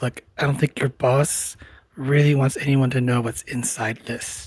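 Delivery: hushed whisper. In a role-play, she leans in close to him, whispering. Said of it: "leans in close to him and kind of whispers".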